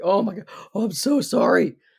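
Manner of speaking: contrite, remorseful, deeply sorry, guilt-laden tone. Defining the word contrite, then demonstrating it: contrite. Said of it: "I'm being contrite right now".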